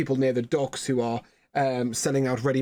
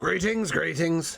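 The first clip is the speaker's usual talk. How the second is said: grumpy dwarf voice, pitched up; 5 semitones higher than usual. Narrator voicing a shop dwarf greeting an entering customer, grumpy dwarf Bryce voice. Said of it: "the uh, uh, most grumpy dwarf looks up at you".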